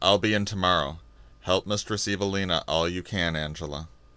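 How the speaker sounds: very low, dull, lifeless, flat monotone. Passing a woman's desk on his way out, a man speaks to her dully. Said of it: "he said dully".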